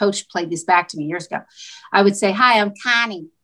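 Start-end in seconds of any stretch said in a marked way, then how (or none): 2.3-3.2 put-on Delaware County accent. Recalling how she used to say her name, in a nasal Delco accent. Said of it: "But a Delco accent".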